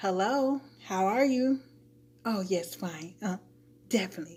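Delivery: put-on polite, professional front voice. Showing the voice put on when at a job: put-on work voice. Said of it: "you know how you put on that voice".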